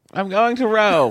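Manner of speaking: put-on British accent, pitched very high. Voicing a caller's son talking to his mother: British accent. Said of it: "now he speaks with a British accent?".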